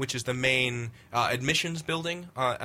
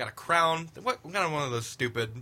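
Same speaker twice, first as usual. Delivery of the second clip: usual speaking voice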